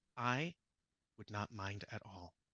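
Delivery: grave, dead-serious, soft and slow. Retelling what a man replied, putting on his very serious tone. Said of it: "with a very serious like tone".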